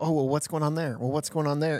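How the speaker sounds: usual speaking voice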